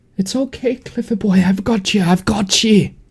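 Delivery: just a slight, high half-whisper. Narrator voicing a mysterious voice that calls to Cliff, slight half-whisper. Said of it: "It is a slight whisper".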